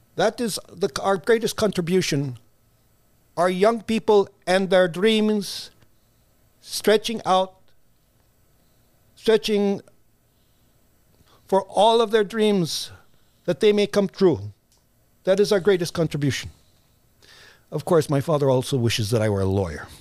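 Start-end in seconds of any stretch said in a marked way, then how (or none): 0.2-16.5 put-on solemn Filipino-accented speech. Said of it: "That's the accent?".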